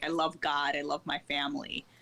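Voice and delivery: ordinary delivery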